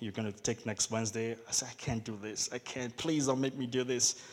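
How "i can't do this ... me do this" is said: mock imploring, pleading, begging tone. Recalling pleading with a man in his office, retelling own pleading. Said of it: "And I pleaded".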